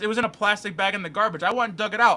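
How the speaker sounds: ordinary delivery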